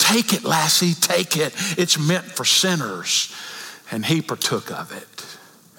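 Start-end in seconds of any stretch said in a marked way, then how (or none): 0.0-3.3 carrying stage whisper. Speaker retells a scottish believer's words to a woman in tears in church, whisper heard throughout the church. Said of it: "in a whisper that could be heard throughout the church".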